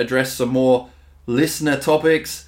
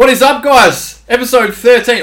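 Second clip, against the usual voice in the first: hyped, fired-up shouting, higher and louder; 10 semitones higher, 10 dB louder than usual. Opening the podcast episode, jacked up on coffee: fired-up yelling. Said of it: "I've come in too hot there".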